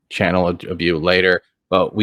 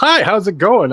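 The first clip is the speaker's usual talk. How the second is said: put-on, forced bright excitement, very high; 13 semitones higher, 4 dB louder than usual. Greeting another speaker while low on energy: put-on excitement. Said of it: "I'm trying to sound excited".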